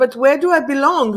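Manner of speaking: ordinary delivery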